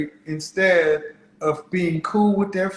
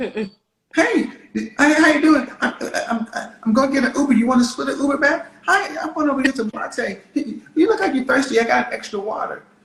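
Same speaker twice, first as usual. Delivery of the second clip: acted-out woman's voice, pitched higher; 7 semitones higher than usual. Acting out a woman outside a classroom offering cookies: imitating a woman approaching a man. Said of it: "And then they're standing outside of your classroom".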